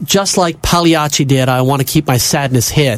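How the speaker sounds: plain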